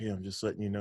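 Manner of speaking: muttering under breath. Retelling what a DPS officer said: imitating someone speaking under his breath. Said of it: "he says it under his breath".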